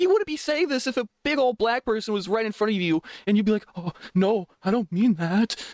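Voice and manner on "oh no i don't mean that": acted frightened voice, slow and scared. Ranting about a critic, imitating him backing down, mock-scared backpedaling.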